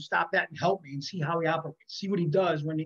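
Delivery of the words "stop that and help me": normal talking voice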